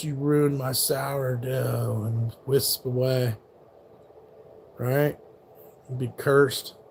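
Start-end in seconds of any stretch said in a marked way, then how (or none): 0.0-2.0 hushed, spectral half-whisper like a ghost. Joking about a ghost haunting a chef's kitchen: ghostly half-whisper. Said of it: "the ghost whispers".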